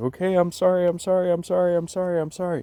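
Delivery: mock frantic, very high, loud, repeated pleading. Retelling curling up on the ground, imitating own panicked apology. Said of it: "I was just in panic mode".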